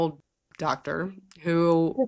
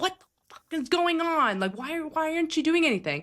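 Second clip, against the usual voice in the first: mock, very high, fed-up, exasperated shouting; 10 semitones higher than usual. Recalling confronting a partner who wasn't working, retelling yelling. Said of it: "you're yelling at me".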